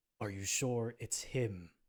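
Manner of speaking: eerie, strange, otherworldly, unearthly voice. Narrator voices a figure calling out from the shadows: strange, unearthly voice. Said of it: "a strange, unearthly voice".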